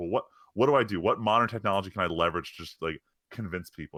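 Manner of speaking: plain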